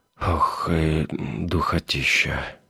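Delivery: muttering sheepishly. Narrator reads Plakhov unbuttoning his shirt collar, with an embarrassed mutter. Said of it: "смущенно пробормотал".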